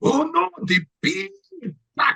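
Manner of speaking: very high-pitched cartoon cat voice. Retelling lines Puss in Boots says on a ride: imitating Puss in Boots voice. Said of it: "he does the voice".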